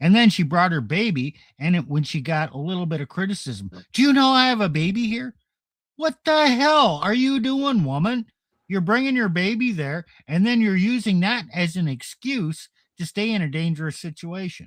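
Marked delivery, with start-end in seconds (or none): 3.9-5.3 put-on obstinate defiance, high and loud. Retelling a woman's reply to criticism for bringing her baby, mimicking a defiant woman. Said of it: "She was just defiant and obstinate".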